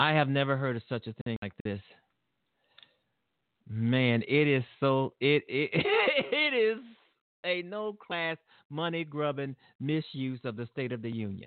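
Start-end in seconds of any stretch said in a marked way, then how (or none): 5.7-6.8 high burst of laughter. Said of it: "excuse me for laughing".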